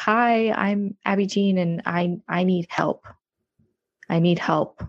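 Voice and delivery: slow, sobbing, pleading voice. Retelling walking up to a group of women and asking for help, retelling a sobbing plea. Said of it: "I was sobbing".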